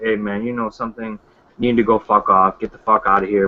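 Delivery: put-on unbothered, even-tempered, calm and low voice. Speaker imitates how his old teacher told people off: imitating a calm insult. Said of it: "but just in a more calm".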